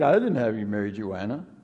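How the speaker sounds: very low, slurred stoner voice. Describing a guy in a 420 shirt with the munchies: put-on slurred speech. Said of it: "a little bit of a slurred speech".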